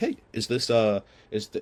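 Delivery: really friendly, slow, warm tone. Showing how a call opener used to sound: imitating own really friendly tone. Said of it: "in a really friendly tone".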